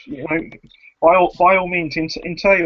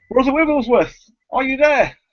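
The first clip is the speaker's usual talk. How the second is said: shouting loudly, pitched high; 9 semitones higher than usual. Narrating a church scene, voicing Ismark calling to someone inside, shouting out. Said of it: "Ismark shouts out".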